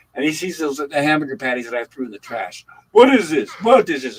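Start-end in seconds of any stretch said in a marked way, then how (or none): 2.9-4.2 put-on very loud, thick, heavy Italian accent. Retelling a man finding patties in the kitchen trash, in a heavy Italian accent. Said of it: "In this heavy Italian accent".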